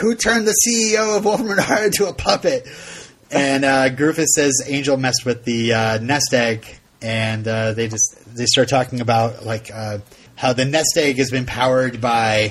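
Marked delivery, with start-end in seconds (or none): 0.0-2.7 play-acted angry voice, pitched very high. Retelling the scene where Polo calls a puppet meeting: angry Polo. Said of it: "and Polo's pissed".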